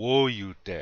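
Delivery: woyute with weight on first syllable wo-. Pronunciation lesson repeating a word: stress on first syllable of woyute. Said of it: "the accent's on the first syllable".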